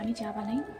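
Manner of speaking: quiet hushed speech. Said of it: "আস্তে কথা বলছি".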